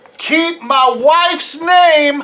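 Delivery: high, slow, drawn-out scream.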